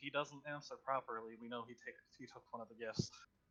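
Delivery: soft, hushed half-whisper. Voicing a character who turns to a squire and half-whispers: half-whispering. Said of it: "turn back to Sir Knight Squire and whisper".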